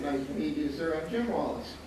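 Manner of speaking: ordinary talk, nothing marked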